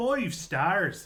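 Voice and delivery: put-on Irish accent that sounds like a pirate. Asked by friends to try irish next, give it a go: irish accent, kind of pirate. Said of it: "that was kind of pirate".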